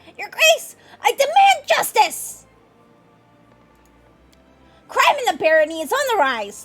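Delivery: very high-pitched voice. Voicing a stranger demanding justice from your grace: unusually high-pitched voice. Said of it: "speaks to you in an unusually high-pitched voice".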